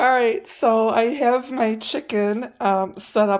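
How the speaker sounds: loud, drawn-out laughing through the words. Seasoning a chicken while explaining the steps; laughing while talking. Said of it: "I'm sorry I'm laughing here".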